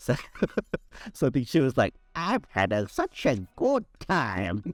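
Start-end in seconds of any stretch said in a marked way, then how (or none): 2.1-4.6 slow, sing-song put-on old lady voice. Retelling what she said while they did silly voices, old lady voice. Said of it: "sort of this old lady voice".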